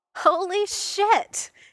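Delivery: very high, loud outburst breaking into laughter. Clint exclaims in reaction, starting to laugh. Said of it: "starting to laugh".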